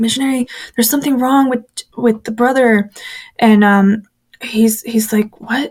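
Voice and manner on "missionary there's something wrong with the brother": mock-frantic, acted-out panicked voice. Speaker retells banging on the missionary's door for help, acting out own panic. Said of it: "I'm panicking".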